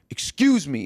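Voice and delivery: put-on snotty voice full of attitude. Retelling a stranger's reply after getting off the train: imitating someone giving attitude. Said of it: "he gave me attitude".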